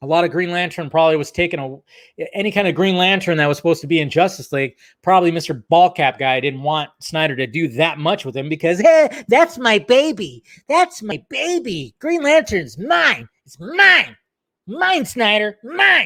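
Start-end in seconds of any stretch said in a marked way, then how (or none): 8.8-16.1 very slow, drawn-out, high, swooping delivery. Imitating a comics writer claiming Green Lantern as his own: Geoff Johns impression. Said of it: "That was my Jeff Johns impression".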